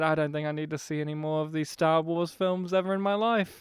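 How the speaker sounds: ordinary delivery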